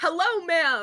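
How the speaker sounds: loud, high hollering yell. Playing a character calling to a stranger across a crowd: yelling loudly over a crowd. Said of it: "yelling loudly".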